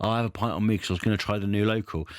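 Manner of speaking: ordinary talk, nothing marked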